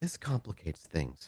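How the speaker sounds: very quiet, hushed, but fully voiced. Narrator voicing her line as she looks at David, very quiet, not whispered. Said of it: "She does not whisper, but very quietly say".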